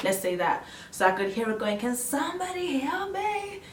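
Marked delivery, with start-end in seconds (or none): 1.8-3.6 put-on American accent, very high and slow. Recalling hearing another patient after surgery, the speaker quotes her in an American accent. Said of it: "in an American accent".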